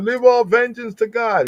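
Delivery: high, mocking put-on voice.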